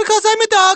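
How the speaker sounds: put-on very high, loud little boy voice. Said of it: "the voice explains".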